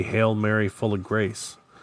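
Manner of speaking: usual speaking voice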